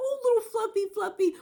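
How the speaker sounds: mock sweet, affectionate pet talk, very high pitch. Recalling how a man always talked to his dog, imitating sweet talk to a dog. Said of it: "He always talked sweet to Fluffy".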